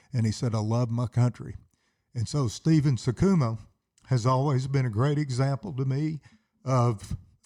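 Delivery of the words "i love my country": ordinary delivery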